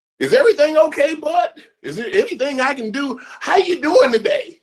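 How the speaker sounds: very high, eager, fawning sucking-up voice. Retelling what the boss says at the office: imitating fawning boss. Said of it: "This is what my boss say to me".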